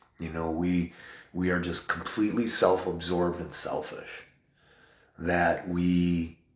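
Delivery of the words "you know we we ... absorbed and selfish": normal talking voice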